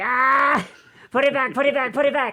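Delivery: very high, very loud, shrill repeated scream. Speaker showing how she reacts when magic is used on her, imitating her screaming. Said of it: "she starts screaming".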